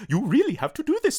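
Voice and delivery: very high, loud, squeaky kooky cat voice. Describing one dub's version of Luna the cat, doing a kooky Luna cat voice. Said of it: "quite a kooky kind of cat".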